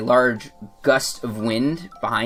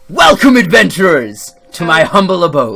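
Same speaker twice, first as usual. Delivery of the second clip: big, large, booming voice; 5 semitones higher, 10 dB louder than usual. Voicing a figure greeting the adventurers in his abode: large booming voice. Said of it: "in a large, booming voice".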